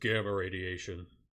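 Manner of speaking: heavy brute character voice. Retelling a kitchen scene as Hulk correcting Iron Man: Hulk voice. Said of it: "And Hulk goes".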